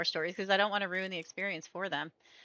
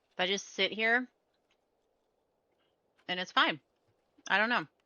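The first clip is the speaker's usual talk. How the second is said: talking while chewing, mouth full of food. Talking casually to viewers while eating, talking while chewing. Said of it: "I'm chewing".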